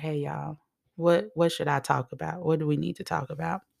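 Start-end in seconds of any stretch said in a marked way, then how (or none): none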